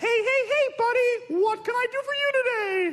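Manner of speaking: squeaky cartoon mouse voice. In a comedian's bit, Mickey Mouse answers the phone: Mickey Mouse voice. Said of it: "Mickey Mouse answers the phone".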